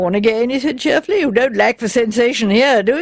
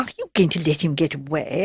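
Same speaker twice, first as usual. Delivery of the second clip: conspiratorial whisper, quieter and lower; 7 semitones lower, 7 dB quieter than usual. Bunch asks Constable Abel about the departing man, in a conspiratorial whisper. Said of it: "in a conspiratorial whisper".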